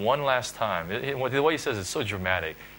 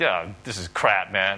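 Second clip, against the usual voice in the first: openly jeering, scornful, very mocking tone. Retelling how a man reacted when a verse came, mimicking his very mocking tone. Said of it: "just very mockingly like".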